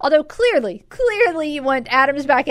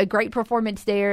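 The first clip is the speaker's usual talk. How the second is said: plain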